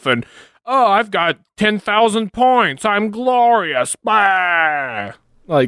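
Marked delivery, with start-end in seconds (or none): 0.7-3.9 put-on, very high-pitched mocking voice. Retelling what people write on Imgur: mocking imitation of Imgur users. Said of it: "you see it on Imgur where it's like".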